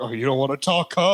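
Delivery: mock menacing, threatening interrogator tone. Imagining going up to the guy in the game: mock threatening tone. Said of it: "I'd go up to the guy and be like".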